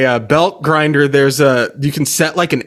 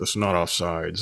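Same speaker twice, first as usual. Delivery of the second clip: put-on muttering, lower and quieter; 9 semitones lower, 12 dB quieter than usual. Retelling how a guy at the game talked to himself: imitating muttering under breath. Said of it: "talking to himself, like, under his breath".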